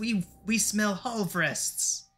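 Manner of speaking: tiny, high little voices, very slow and drawn out. Voicing unseen speakers heard from outside the room, in tiny voices. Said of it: "you would be able to hear tiny voices".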